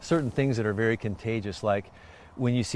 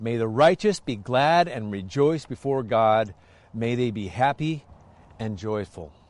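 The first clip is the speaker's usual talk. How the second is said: usual speaking voice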